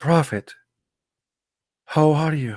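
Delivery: small, subdued voice. Showing how to address the messenger properly, speaking in a lowered, subdued voice. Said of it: "You have to lower your voice".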